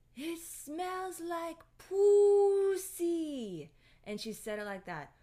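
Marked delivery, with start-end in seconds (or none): 0.2-3.7 put-on very loud, very slow, high scream, Filipino accent. Retelling his mom bursting into his room, imitating mom screaming, Filipino accent. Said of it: "screams in her filipino accent".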